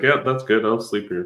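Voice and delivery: drowsy, sleepy dog voice. Watching a dog pretend to sleep and voicing the dog: voicing a sleepy dog. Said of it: "He's like".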